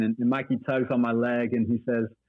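ordinary delivery

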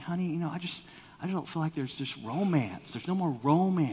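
mock meek, humble and gentle tone. Acting out a husband telling his wife there's no romance: imitating a humble, gentle husband. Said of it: "he's being all humble and gentle".

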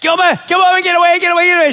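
re-enacted full-lung scream. Retelling a gator scare, the speaker re-enacts screaming at the dog. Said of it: "I'm screaming my lungs out at the dog".

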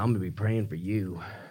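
low, soft, dead-serious, solemn voice. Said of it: "she was dead serious".

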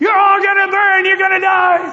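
very high, shrill screaming yell. Retelling a man on a shuttle bus screaming at the passengers: imitating someone screaming. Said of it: "the last thing I heard as I was getting off the bus".

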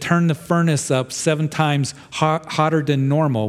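normal talking voice

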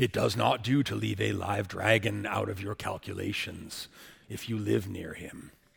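very low, hushed, deep, raspy wizard voice. Quoting your favorite Gandalf line from The Hobbit during a service, Sir Ian McKellen voice as Gandalf. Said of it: "I'll do my best Sir Ian McKellen voice".

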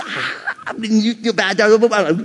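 silly gibberish babble. Retelling how they talk nonsense to a baby girl: imitating own baby talk babble. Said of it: "I'm speaking in tongues with my baby girl".

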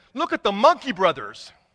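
ordinary delivery

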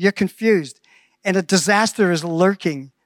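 ordinary delivery

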